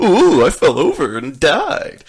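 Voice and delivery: booming, slow, with swooping pitch. Complaining about a skateboarding game, imitating the clown falling: Krusty the Clown voice. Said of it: "without him going".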